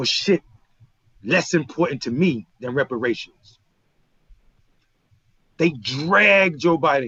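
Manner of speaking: voice straining to hold back emotion. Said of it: "I'm trying not to be emotional right now".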